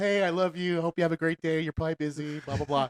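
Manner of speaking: mock nice, sweet, loving, affectionate voice. Reading out a meme's voicemail from a girlfriend: imitating a sweet voicemail. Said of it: "it leaves a nice voicemail".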